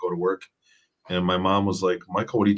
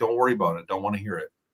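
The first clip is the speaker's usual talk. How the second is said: put-on fast, raised, dismissive brush-off. Retelling a parent's reply at the breakfast table: imitating dad raising his voice. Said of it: "he raised his voice".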